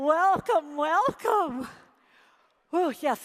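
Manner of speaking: out of breath. Speaker welcoming people right after shouting and cheering, out of breath. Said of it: "I'm exhausted and I have to talk".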